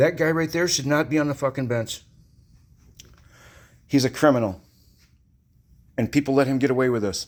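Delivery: openly angry, heated outburst. A parent denounces the judge in their son's case, angry. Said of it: "sorry for the angry".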